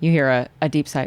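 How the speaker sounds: ordinary talk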